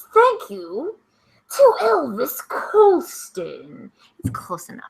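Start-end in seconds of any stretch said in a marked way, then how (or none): 0.1-3.9 very slow, swooping, drawn-out villain voice. Taking turns thanking special people, the speaker does a Bane voice. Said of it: "You know the Bane voice".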